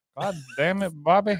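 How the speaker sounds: put-on cartoon Texan dad voice. Asked by a friend to do another voice, doing a Hank Hill impression. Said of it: "Give us something else".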